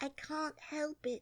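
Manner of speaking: very meek, timid, slightly high voice. Narrator reading Alice answering the Dormouse sitting next to her, meek. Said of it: "said Alice very meekly".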